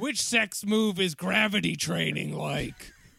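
put-on gruff, rough vigilante voice. Asking the others a joke question in a Rorschach voice. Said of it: "I was doing Rorschach".

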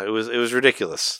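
plain

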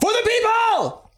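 very high-pitched rallying battle-cry yell. Voicing a thief who charges the queen on stage: yelling. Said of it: "And he yells".

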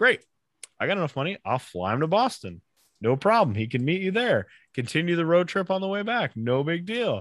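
play-acted very calm, even, easy tone, slightly high. Retelling a friend's answer after hearing Will can't come, imitating Phil's calm reply. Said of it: "Phil's just like very calmly".

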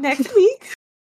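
high, squeaky, small voice. Imitating the other speaker saying "next week": imitating a squeaky voice. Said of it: "Your voice got a little squeaky when you're like".

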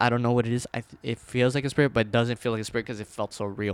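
ordinary talk, nothing marked

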